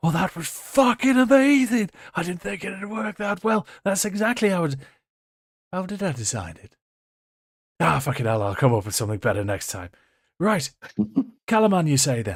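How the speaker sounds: out of breath, panting, gasping, very high. The narrator voices Tatina as she turns around: Tatina panting and gasping. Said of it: "panting and gasping as she turns around".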